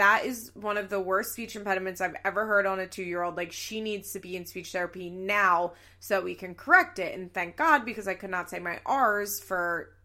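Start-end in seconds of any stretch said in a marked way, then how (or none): none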